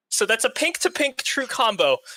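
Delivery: ordinary delivery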